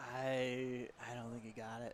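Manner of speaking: soft, hushed half-whisper with drawn-out I. Answering the commentator's question about the surfer's score: half-whispering. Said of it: "I love how you say that in a whisper".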